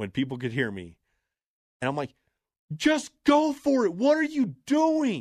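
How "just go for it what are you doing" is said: very high, loud, slow, drawn-out yell. Retelling what he shouted from the crowd, re-enacting his own yell. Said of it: "And I yelled at the appropriate time".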